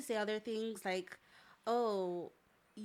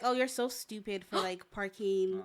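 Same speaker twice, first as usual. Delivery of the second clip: put-on serious tone, louder; 5 dB louder than usual. Retelling how a former friend insulted them, not joking: imitating someone saying it seriously. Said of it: "she wasn't joking".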